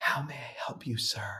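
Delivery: quiet, soft, breathy, barely voiced whisper. Retelling the greeting of a woman behind a spa desk: imitating a whisper. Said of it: "she whispers".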